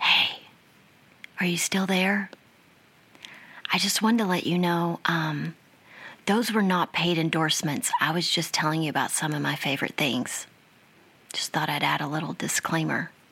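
soft, hushed whisper. Adding a disclaimer after saying goodbye to listeners: whispering. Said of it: "Why are we whispering?".

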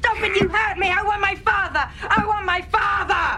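very high, put-on bratty child tantrum. Describing a young actor's scene, acting out his tantrum. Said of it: "he stages this tantrum".

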